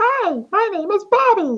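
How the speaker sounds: very high, put-on falsetto voice. Demonstrate the voice that they apparently think is your falsetto, in a falsetto voice. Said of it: "they think that's my falsetto".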